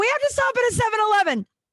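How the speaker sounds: high-pitched, fast, desperate begging tone.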